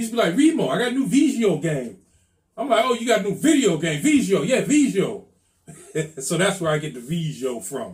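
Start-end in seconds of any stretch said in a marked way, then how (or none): 0.4-2.0 put-on strong, heavy Caribbean island accent. Retelling what a guy used to say about his new video game: heavy caribbean accent. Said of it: "he had a heavy Caribbean accent".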